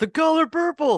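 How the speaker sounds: very high-pitched, loud scream. Recounting someone in the audience calling out during a talk, retelling an audience scream. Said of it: "somebody from the audience just screamed out".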